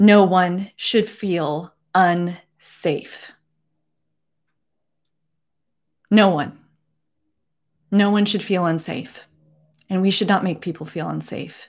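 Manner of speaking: emotional, choked up, holding back tears. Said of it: "I'm emotional and I'm not gonna cry".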